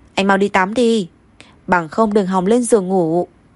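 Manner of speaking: plain reading voice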